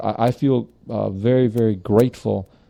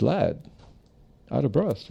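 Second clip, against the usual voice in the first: rough put-on British accent; 3 semitones higher, 6 dB quieter than usual. Retelling what a panel speaker said to a late student: imitating a British accent. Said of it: "in his British accent, he says".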